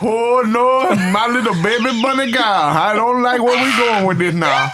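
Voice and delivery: put-on Creole accent, pitched very high. Mimicking a man who just changed up his accent, imitating a Creole accent. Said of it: "just turned straight like Creole".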